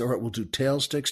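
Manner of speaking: soft-spoken, hushed, quiet delivery. Retelling how a director quietly called a shot: imitating someone speaking softly. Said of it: "the director says softly".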